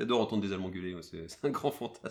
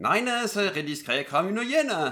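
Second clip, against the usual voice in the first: fake German accent, much louder; 11 semitones higher, 7 dB louder than usual. Urged by a friend to try again, the speaker repeats the phrase in a fake German accent. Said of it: "vas-y, essaye encore".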